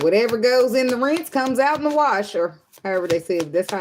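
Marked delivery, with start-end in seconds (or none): 0.0-2.3 loud southern country lady voice. Showing how an old saying sounds in the head: country voice. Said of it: "it sounds like this".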